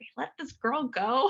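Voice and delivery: high, fed-up, disbelieving, frustrated exasperation. Recalling a man in the emergency room after her discharge, imitating a frustrated voice. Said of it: "hearing his frustration in his voice".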